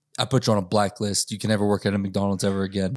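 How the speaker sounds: usual speaking voice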